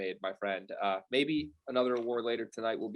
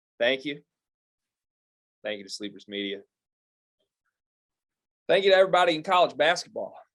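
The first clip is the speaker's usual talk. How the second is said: loud, booming head coach voice; 4 semitones higher, 6 dB louder than usual. Accepting an award on behalf of the Houston Cougars as their head man, in a Kelvin voice. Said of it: "I don't know why I'm talking like this".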